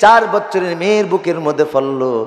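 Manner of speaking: ordinary talk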